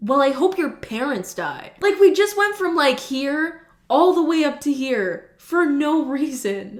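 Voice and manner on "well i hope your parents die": put-on petty, venomous, spiteful, nasty tone. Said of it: "the other person's like".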